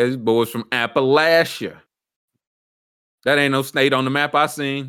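plain

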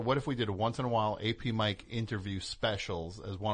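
ordinary talk

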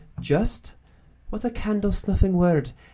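put-on high-pitched Scottish accent, Scottish brogue. Retelling a favorite movie scene, the speaker quotes J.M. Barrie in a Scottish accent. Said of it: "that's my Scottish accent".

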